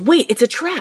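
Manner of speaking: mock abrupt, blurted, high-pitched sudden yell. Recapping a scene where two characters sit in a jail cell, retelling a sudden yell. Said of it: "Toph all of a sudden yells".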